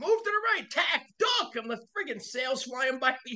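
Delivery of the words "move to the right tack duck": put-on, very high-pitched yelling. Retelling how Robin yelled orders on the sailboat: imitating Robin yelling. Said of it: "he's fucking yelling at everybody".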